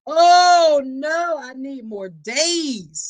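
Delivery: play-acted, high, loud, very slow, facetious drawn-out begging. Imitating an abuser pleading for more visitation time: mock pleading abuser. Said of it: "I'm being facetious".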